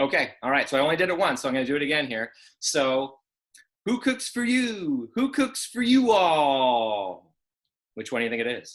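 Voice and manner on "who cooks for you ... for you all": very slow, high, swooping southern-drawl owl hoot. Demonstrating a bird call for the boys and girls to guess: barred owl call, southern drawl. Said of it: "but it has a southern drawl".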